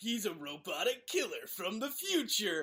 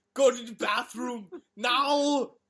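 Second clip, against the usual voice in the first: booming, very loud yell; 3 semitones higher, 9 dB louder than usual. Retelling a movie idea where Arnold yells at a baby: mock-yell as Arnold. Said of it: "Arnold just yelling at the baby".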